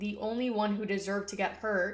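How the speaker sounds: ordinary delivery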